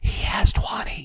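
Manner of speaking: soft whispered voice. Retelling a card game, the speaker repeats their answer to a woman: retelling own whisper. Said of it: "I whisper back".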